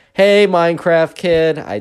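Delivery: over-animated, obviously put-on, fake animated gushing. Retelling Aaron calling out to the Minecraft kid: Aaron's animated fake voice. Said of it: "she says it in such, like, an animated, like, fake way".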